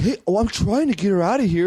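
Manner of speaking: high-pitched, angry, protesting voice. Retelling how the boyfriend got mad at everybody at the party: imitating someone getting mad. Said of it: "he was getting mad at everybody else".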